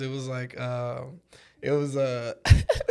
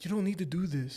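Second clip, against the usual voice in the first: quieter, put-on crying, pleading voice; 3 semitones higher, 8 dB quieter than usual. Imitating a friend crying at a strip club: imitating John Cornelio crying. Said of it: "He'd probably be crying in a strip club".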